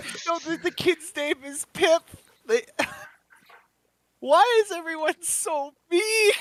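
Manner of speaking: very high, loud sobbing voice. Player's character, still crying, reacts in the scene: crying. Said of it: "and I'm like still crying".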